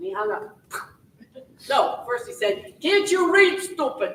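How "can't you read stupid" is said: thick, heavy put-on Italian accent, pitched up. Realtor retells what a man said on the phone: heavy Italian accent. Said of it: "he said in a very heavy Italian accent".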